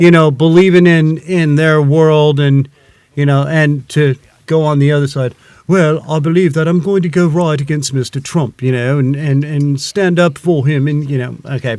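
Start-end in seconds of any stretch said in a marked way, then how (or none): 5.7-10.9 put-on posh British professor-like accent. Imitating a protester in a smart professor voice: British professor voice. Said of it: "I sounded like a smart professor from Britain".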